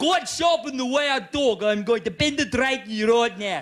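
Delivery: jarring, far from soothing, put-on South African accent. Speaker who has been to south africa mocks the accent, unrelaxing south african accent. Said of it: "it's not a relaxing accent".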